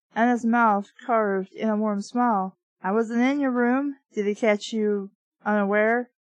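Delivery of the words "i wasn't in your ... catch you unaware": normal talking voice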